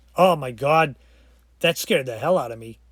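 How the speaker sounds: normal talking voice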